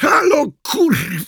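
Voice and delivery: roaring bellow, very high pitch, full volume. Reading Kordian getting only silence on the phone, roaring at full volume. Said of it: "Ryknął na cały regulator".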